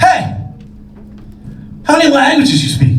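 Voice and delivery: high, aggressive, demanding tone. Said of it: "all aggressively goes".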